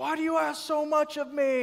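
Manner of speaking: flipped-out, high, drawn-out screaming outburst. Acting out a struggling man snapping at his wife, imitating someone screaming. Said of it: "you're just screaming at her and yelling".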